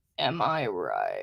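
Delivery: fake creaky voice. Musing to viewers about framing your life, put-on vocal fry. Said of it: "Is my vocal fry getting to you".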